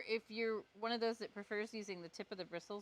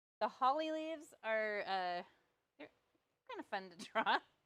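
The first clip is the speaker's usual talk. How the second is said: dry, thick, heavy sarcasm; 3 dB louder than usual. While demonstrating a drawing to viewers, speaking sarcastically. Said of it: "I just mean that in the most sarcastic way ever".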